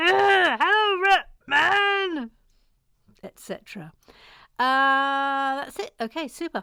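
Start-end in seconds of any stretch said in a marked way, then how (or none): 0.0-2.3 high, loud squeaky voice. Going through a numbered list, the speaker does a Roland Rat voice. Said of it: "in that voice from back in the day".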